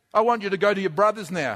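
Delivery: ordinary delivery, nothing marked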